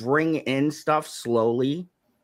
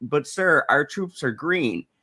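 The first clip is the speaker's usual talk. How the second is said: normal talking voice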